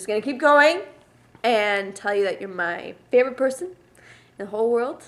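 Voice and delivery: very loud, halting voice breaking through tears. Recording a sixteenth birthday message, crying while talking. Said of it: "I tried to practice this without crying, but since I can't".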